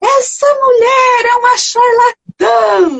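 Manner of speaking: mock very high, shrill, drawn-out shout. Performer recounting a street person who stood up during her act, retelling a shout. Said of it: "levantou e gritou assim".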